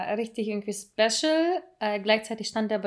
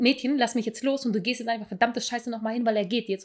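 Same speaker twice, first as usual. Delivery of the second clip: plain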